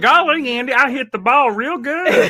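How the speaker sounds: very high-pitched, very slow, drawn-out voice. Joking that a ballplayer sounds like Gomer Pyle: Gomer Pyle voice. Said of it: "So Mickey Mantle sound like Gomer Pyle?".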